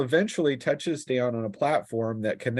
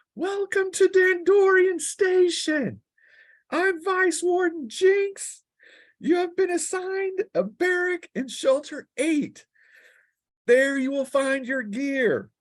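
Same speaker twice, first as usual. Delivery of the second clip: very high screaming shout. A narrator voices the vice warden greeting new arrivals at the station: Jinx screaming over the wind. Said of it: "she screams over the cutting cold".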